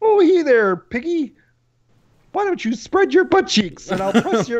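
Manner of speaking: high, little frog puppet character voice. Taking a turn in an impression round, Kermit the Frog voice. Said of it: "[name], go".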